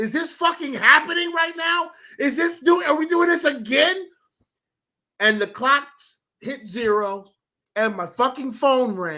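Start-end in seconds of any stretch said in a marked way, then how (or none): 0.0-4.1 acted-out yell, much higher. Recounting watching a fumble, the speaker retells his yell. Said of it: "I yelled out".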